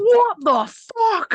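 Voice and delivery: loud, shrill, very high shriek. Retelling a passing motorcyclist's reaction: imitating a loud shout. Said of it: "as loud as possible".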